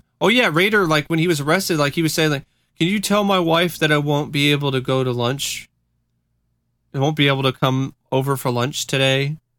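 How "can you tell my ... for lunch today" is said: play-acted casual, offhand, nonchalant everyday voice. Retelling what an arrested man said to the police: imitating a nonchalant tone. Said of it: "just nonchalantly".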